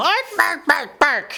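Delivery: high yelping goblin yell. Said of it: "and just yell".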